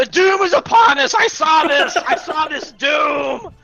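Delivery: very high-pitched, drawn-out, crazed screaming. Playing a character who foresees doom, screaming like a crazy man. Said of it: "I start screaming like a crazy man".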